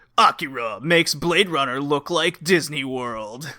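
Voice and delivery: crazy, over-the-top movie trailer announcer delivery. Quoting the announcer of a DVD commercial, in a crazy trailer voice. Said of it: "crazy trailer voice goes".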